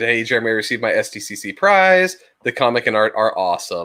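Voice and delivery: plain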